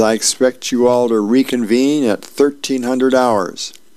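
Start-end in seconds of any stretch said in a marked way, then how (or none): none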